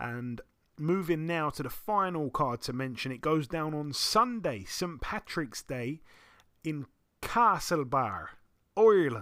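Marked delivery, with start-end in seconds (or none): 6.6-9.2 bad put-on Irish accent, loud, sing-song. Boxing commentator running through the final fight card, terrible Irish accent. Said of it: "terrible, terrible Irish accent".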